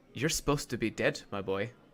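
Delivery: leaning-in, hushed half-whisper close to the ear. After a moment, a character half-whispers into your ear: hushed half-whisper. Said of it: "kind of whispers into your ear".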